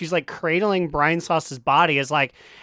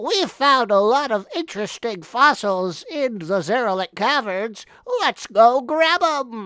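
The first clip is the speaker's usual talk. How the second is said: goofy, high put-on nerd voice; 6 semitones higher than usual. Quoting the Blood Elf guy's line, in a nerdy voice. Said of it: "it's literally my nerd voice".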